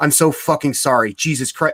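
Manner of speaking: frantic, flustered, panicked, profuse and hurried tone. Retelling a label owner's reply to a wrong order: imitating a panicked apology. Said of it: "panicked about it".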